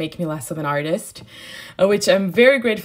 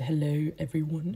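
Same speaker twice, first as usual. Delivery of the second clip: put-on British accent; 3 semitones lower, 10 dB quieter than usual. Greeting viewers at the start of a video: british accent. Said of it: "with my British accent".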